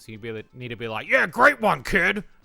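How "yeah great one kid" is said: booming, very loud, high Southern accent, cartoon dinosaur voice. Directing a voice actor, the speaker demonstrates a Southern voice playing Tricky the dinosaur. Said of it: "her Southern voice pretending to be this this uh the dinosaur".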